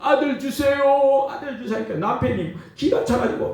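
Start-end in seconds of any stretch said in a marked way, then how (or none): 0.0-1.8 put-on weeping, high, tearful pleading, over and over. Retelling Hannah praying at the feast: imitating tearful pleading. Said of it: "눈물로 막 울면서 자꾸".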